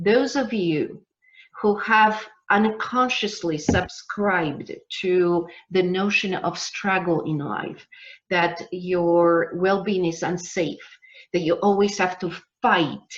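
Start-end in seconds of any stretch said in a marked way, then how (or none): 11.3-13.0 weight leaned hard onto fight. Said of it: "I'm emphasizing the word fight".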